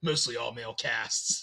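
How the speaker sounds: very low, hushed, deliberately dark brooding voice. Retelling a man's answer about his films, imitating a dark, brooding voice. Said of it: "it's purposely like dark and brooding".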